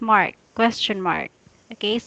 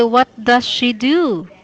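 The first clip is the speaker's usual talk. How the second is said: rising pitch at end, louder; 4 dB louder than usual. Showing a learner how to ask the question: rising question intonation. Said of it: "end your sentence in a raising voice".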